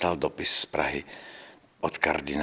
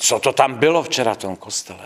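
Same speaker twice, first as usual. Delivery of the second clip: loud, high-pitched, agitated and angry. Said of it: "který se rozčiloval a říká".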